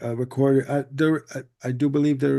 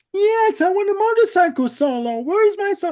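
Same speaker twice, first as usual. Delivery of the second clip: whining, high and loud; 6 dB louder than usual. Retelling Steinman's answer to Todd's question, imitating Steinman whining. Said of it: "in a whiny voice".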